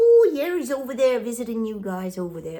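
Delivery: loud put-on Irish accent. Telling viewers Trump is visiting Scotland, in a put-on Irish accent. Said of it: "that's my Irish accent, I think".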